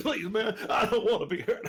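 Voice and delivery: put-on slow, drawn-out pleading. Playing a character approaching hunters: pleading in character. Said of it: "I'm just gonna be like".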